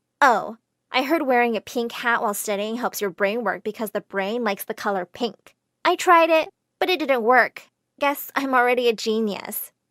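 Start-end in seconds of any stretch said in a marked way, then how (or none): none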